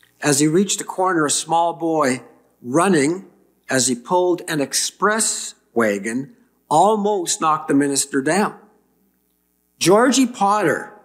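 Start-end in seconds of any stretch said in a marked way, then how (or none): 9.8-10.8 high, affronted, indignant tone. A minister nearly knocked down by a small boy calls the boy's name, indignant. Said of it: "minister began indignantly".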